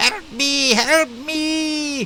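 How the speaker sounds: timid, very high shrieking scream, me drawn out. Narrating a game scene, the speaker voices a timid halfling: screaming timid halfling. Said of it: "the halfling screams".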